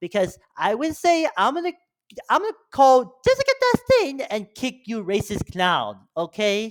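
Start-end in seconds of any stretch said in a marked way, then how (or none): 2.3-6.7 animated delivery with pitch swooping up and down. Imitating a YouTuber threatening the Racist Clown: Grace Randolph impression. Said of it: "that was my Grace Randolph impression".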